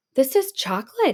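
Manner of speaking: gasped out in surprise, high and breathless. Reading a story aloud, a child finding a chocolate wall: gasping. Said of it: "gasped Hansel".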